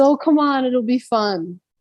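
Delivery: put-on Canadian accent.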